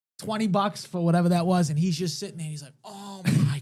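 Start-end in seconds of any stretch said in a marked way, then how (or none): 2.8-3.6 moan of pleasure. Retelling Mark Lewis getting a massage at a strip club, imitating moaning. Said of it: "he was, like, moaning".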